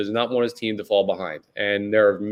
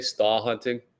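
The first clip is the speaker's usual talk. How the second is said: bad, weak put-on Boston accent; 5 dB quieter than usual. Quoting a Sixers catchphrase about star hunting, in a bad Boston accent. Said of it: "That's my best Boston accent there".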